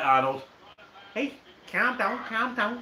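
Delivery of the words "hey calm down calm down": high-pitched put-on Liverpool accent. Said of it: "Let's get it right".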